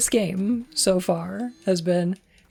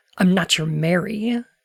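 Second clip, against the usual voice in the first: put-on teasing voice. Acting out Maria's line from the scene: imitating Maria teasing. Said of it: "teasing and going".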